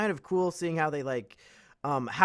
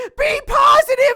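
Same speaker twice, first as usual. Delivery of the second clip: put-on boy yelling, higher and louder; 12 dB louder than usual. Retelling a film scene, a boy reading alone: imitating Bastian yelling. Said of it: "starts yelling".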